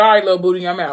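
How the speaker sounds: ordinary delivery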